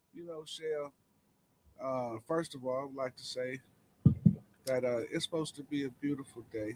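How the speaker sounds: hushed, all-low, very quiet voice. Starting to address someone, the speaker talks all low. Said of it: "why is you talking all low?".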